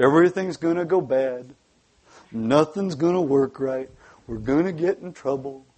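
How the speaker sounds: dropped low and gloomy. A speaker addressing a morning audience, doing an Eeyore impersonation. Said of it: "this is my Eeyore impersonation".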